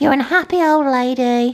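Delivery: grating, high, annoying voice. Speaking to Lucy, the old dog with cancer, in an annoying dog voice. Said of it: "my dog voice is very annoying".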